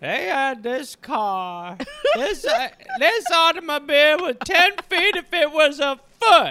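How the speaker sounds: put-on slow, rambling, drunk old man voice. Acting out an old drunk grandpa recalling his first car ride: playing an old drunk grandpa. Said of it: "How are you, Grandpa?".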